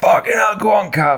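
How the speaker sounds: mock, shrill, high screaming cheer. Retelling jumping off the sofa during a bike race: retelling screaming at the tv. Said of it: "I was screaming at the T V".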